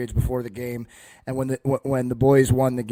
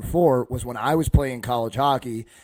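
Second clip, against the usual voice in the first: plain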